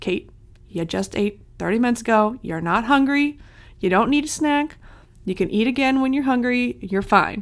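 plain

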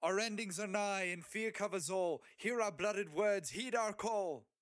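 loud, high-pitched screaming. Fighting a demon monster in the rain, your character calls out: screaming through the storm. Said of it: "through the rain scream".

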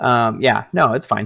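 ordinary talk

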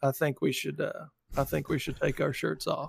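rough, creaky put-on voice blending two voices. Joking about taking shirts off: Bill Clinton and Matthew McConaughey voice mix. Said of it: "mix a Bill Clinton voice into a Matthew McConaughey voice".

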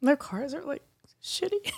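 choked-up voice breaking, crying through words. Sharing a plan to lease her parents a car, crying while speaking. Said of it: "I don't think I've ever heard someone cry when they say the word shitty".

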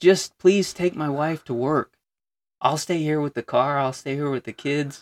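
mock earnest, high, pleading tone. Retelling how a man in bad trouble begged them, imitating someone pleading. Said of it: "He begged us".

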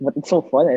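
ordinary delivery

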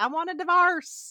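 put-on blended Irish and Southern accent. Retelling the stepmom's line in a film: imitating an Irish-Southern accent. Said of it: "kinda like an Irish Southern".

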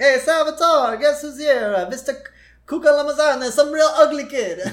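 put-on very high Italian accent. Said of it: "very stereotypical".

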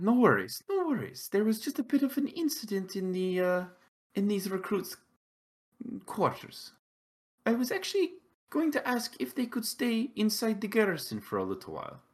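high, soft, reassuring voice.

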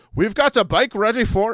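bad put-on Scottish accent, loud, high. Speaker retells what someone in Britain told them, in a bad Scottish accent. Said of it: "now I'm doing a bad Scottish accent".

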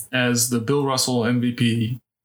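very slow announcer voice, weighing each word. A podcast host finishes presenting the NBA trophy as commissioner, in an Adam Silver impression. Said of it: "Is that my Adam Silver impression?".

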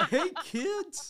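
very high, very loud, squeaky cartoon goof voice. Prompted by another speaker to show it, doing a Goofy impression. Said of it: "I can kind of do a pretty decent goofy impression".

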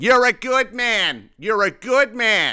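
very high, loud, slow, drawn-out delivery. Retelling a cool old dude praising the speaker while passing by: imitating someone saying it loudly. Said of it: "he's saying it all fucking loud".

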